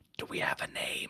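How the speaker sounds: hushed, quiet whisper. Asking the party in character whether they have a name: whispering.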